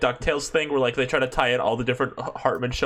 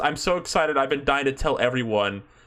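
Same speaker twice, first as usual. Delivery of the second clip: ordinary talk, nothing marked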